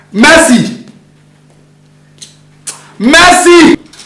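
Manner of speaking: calling out loudly. Calling for mercy, who then complains about the shouting; shouting a name. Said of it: "Why are you shouting my name like that?".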